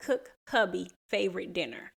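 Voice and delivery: ordinary talk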